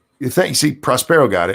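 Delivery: loud, high-pitched shouting. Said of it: "Why are you shouting at us".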